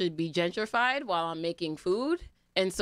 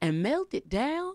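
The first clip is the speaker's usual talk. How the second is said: mock excited Southern woman's voice, higher pitch; 6 semitones higher than usual. Imitating an excited southern woman on a recipe website. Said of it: "bright-eyed, bushy-tailed, uh, Southern woman".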